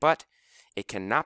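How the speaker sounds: ordinary delivery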